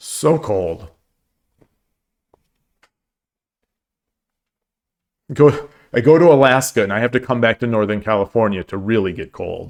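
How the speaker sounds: shivering, shaking, trembling voice from cold. Speaker shivering with cold apologizes and keeps talking, shaking voice from cold. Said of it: "I think my voice is shaking as well".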